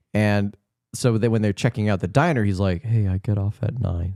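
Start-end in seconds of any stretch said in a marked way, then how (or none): 2.9-4.2 tender, romantic, wooing delivery. Acting out a movie line, imitating Alan Arkin's romantic delivery. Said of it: "a romantic kind of a way".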